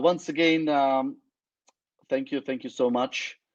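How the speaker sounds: voice breaking up. Wrapping up and thanking everyone, voice cracking. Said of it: "My voice is uh, cracking up".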